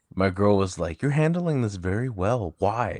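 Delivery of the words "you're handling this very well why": acted, high, startled, shocked, taken-aback tone. Retelling what a girlfriend said about a lost bike: imitating someone shocked. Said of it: "she was shocked".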